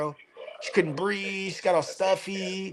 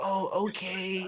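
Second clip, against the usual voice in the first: imitated cute little kid voice; 2 semitones higher, 4 dB quieter than usual. Retelling how sick kids answer at home: imitating kids' cute little voices. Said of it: "their little fucking cute voices".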